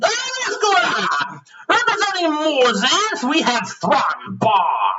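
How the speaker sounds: high, swooping, crowd-hyping fight-announcer yell. Game narrator voices the announcer introducing the fighters to the crowd, yelling fight announcer. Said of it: "the announcer yells out".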